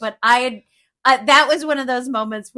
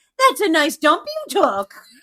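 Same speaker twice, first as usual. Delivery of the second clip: play-acted, very encouraging, high, sing-song praise; 5 semitones higher than usual. Retelling what was said to the dog after a walk: imitating own encouraging tone. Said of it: "I was talking to her very encouragingly".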